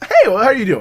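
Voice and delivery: exaggeratedly courteous. Retelling how a wrestler greets people: imitating an overly polite greeting. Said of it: "the most polite person possible".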